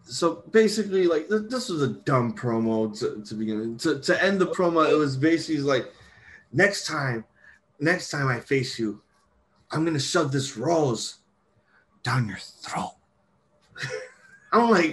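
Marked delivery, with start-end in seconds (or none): 6.5-12.9 mock phone-sex line voice, put-on. Retelling how a dumb promo ended with a threat: like a 1-900 sex line. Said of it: "You said it like a 1-900 sex line".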